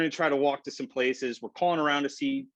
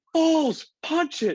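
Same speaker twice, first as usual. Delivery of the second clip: screaming, high and loud; 5 dB louder than usual. Retelling pushing a stuck van: imitating Coach Rule screaming. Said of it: "Coach is just screaming".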